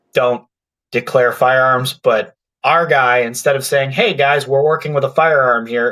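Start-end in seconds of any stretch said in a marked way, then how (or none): none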